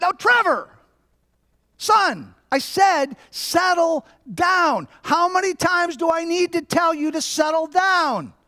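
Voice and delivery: play-acted, fed-up, very high, irritated scolding tone. A father retells what he said to his son, acting out irritation. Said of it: "got really irritated".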